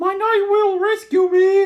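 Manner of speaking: shrill princess voice, unnaturally high-pitched, loud cry. Reading a story, a boy princess on the altar calls for rescue: unnaturally high-pitched voice. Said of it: "in an unnaturally high-pitched voice".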